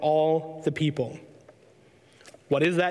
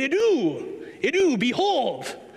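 high, slow, emphatic idou. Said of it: "she would always say it just like that".

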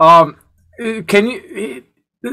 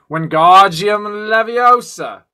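put-on British accent, film-style delivery; 3 semitones higher than usual. Told to do a British accent, the speaker goes for Harry Potter: Harry Potter British accent. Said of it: "you got to do a British accent".

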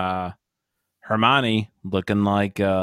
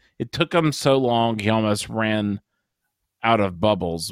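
ordinary delivery

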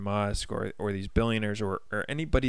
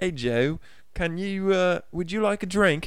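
put-on British accent with pitch much higher than normal; 9 semitones higher, 3 dB louder than usual. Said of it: "I can't do a British accent".

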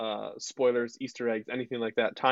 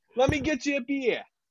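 very high, strong put-on Boston accent. Riffing on a galaxy cantina scene with co-hosts, in a boston accent. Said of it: "That was weirdly Boston".

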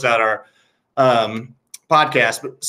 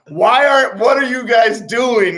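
loud scream, pitched higher; 10 semitones higher, 4 dB louder than usual. Retelling how a kid screamed back at a crowd: imitating someone screaming. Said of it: "starts screaming back at the crowd".

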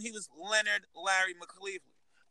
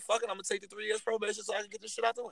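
normal talking voice

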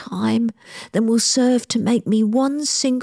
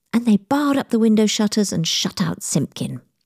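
usual speaking voice

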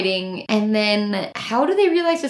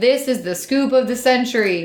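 normal talking voice

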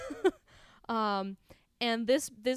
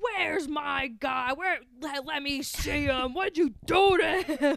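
put-on New York accent, screaming; 4 semitones higher than usual. Retelling a scene with Danny Aiello's character, screaming like Danny Aiello.

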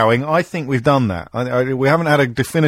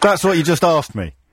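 ordinary talk

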